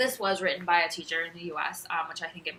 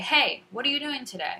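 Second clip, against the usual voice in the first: higher, louder, animated, more emphasis and inflection. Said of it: "more emphasis and inflection".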